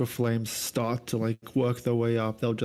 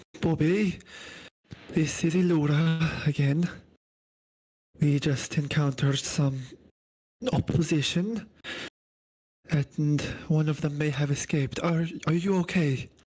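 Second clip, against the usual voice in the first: strained, pitched-up voice; 5 semitones higher than usual. Playing a character checking in after an extended combat, in a strained voice. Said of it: "like a bit of a strained voice after uh, an extended combat".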